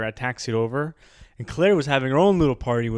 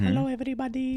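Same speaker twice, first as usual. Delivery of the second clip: put-on Peruvian accent; 12 semitones higher, 6 dB quieter than usual. Describing a puny guy who got sick, imitating a Peruvian guy's voice. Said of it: "He talks like this".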